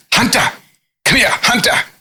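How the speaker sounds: put-on very high, thick accent, hard T in Hunter. Retelling first meeting a man with a thick accent, imitating his thick accent. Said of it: "pronounce my name with the T".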